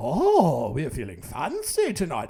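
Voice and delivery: put-on British accent. Acting out a british dinner-table exchange, in a put-on british accent. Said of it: "four different British accents there".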